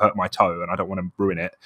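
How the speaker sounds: usual speaking voice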